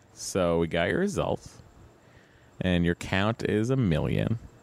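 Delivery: ordinary talk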